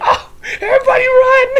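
mock panicked scream, high and loud.

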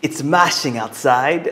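put-on British accent. Telling a pun about a British sweet potato, the punchline in a British accent. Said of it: "I think my Brit accent is better".

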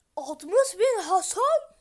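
high, slow, loud shout.

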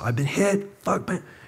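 very high, furious, pissed-off yell. Retelling a partner's cry after being shot: imitating an angry yell. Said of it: "He was just, like, pissed".

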